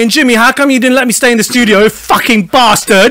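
put-on Cockney accent. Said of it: "she's a Cockney".

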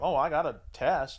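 usual speaking voice

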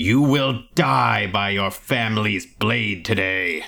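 snarled delivery. Voicing a scarred clan leader raising his sword at the party: snarling. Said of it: "he's just snarling".

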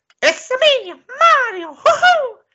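very high, loud, stretched-out cartoon cheer. Quoting a game catchphrase while discussing the film voice: Mario voice. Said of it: "You can tell that that's Mario".

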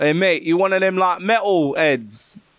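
put-on local Chatham street accent. Retelling how people who stop him in Chatham talk, in a put-on accent of the locals. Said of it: "what accent was that?".

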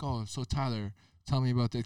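plain

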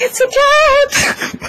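blissful, overjoyed, very high-pitched delight. Voicing Arlie, who is petting a cat: voicing Arlie, overjoyed. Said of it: "In that exact tone of voice".

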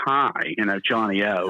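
slow, sultry, sexy, seductive voice. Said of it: "real sexy voice going".

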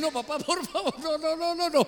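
acted whining, begging crybaby pleading, high-pitched. Retelling how they begged their dad as a crybaby kid: mock whiny crybaby pleading. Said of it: "pero chillón".

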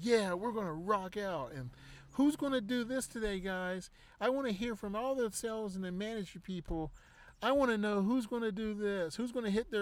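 put-on salesman voice, fake and high-pitched. Retelling what the leader of a sales conference call said, in a fake high-pitched voice. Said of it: "the fake high-pitched voice".

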